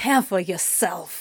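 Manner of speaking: words hissed out in a demon voice. Reading a story aloud, voicing the dark demon's retort: hissing. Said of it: "the dark demon hissed".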